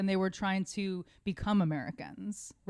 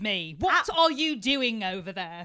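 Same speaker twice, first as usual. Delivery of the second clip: put-on British accent. Explaining where the american accent came from, acting out a british person: put-on british accent. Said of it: "How's the British accent go?".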